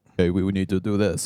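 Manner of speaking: acted authoritative voice. Imitating Toto giving a team order: imitating Toto's commanding voice. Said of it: "he's got that commanding presence of".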